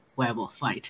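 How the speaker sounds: low, eager, excited mutter under the breath. Playing a character muttering to herself before a fight: excited, under her breath. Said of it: "under her breath to herself, very excitedly".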